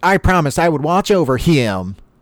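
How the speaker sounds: weird, high, faintly accented cartoon voice. Retelling a cartoon scene, quoting SpongeBob the way he says it. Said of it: "weird the way SpongeBob says it".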